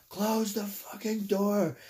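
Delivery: loud, high-pitched shout.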